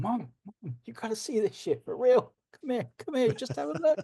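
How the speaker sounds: very high, way up, swooping little dog voice. Discussing the script, voicing the dog as Janet drags him home, Thor's little dog voice. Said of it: "you can almost hear his little dog voice going".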